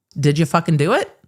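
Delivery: plain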